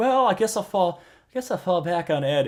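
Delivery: mock resigned, mopey, high-pitched whine.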